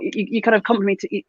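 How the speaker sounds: ordinary talk, nothing marked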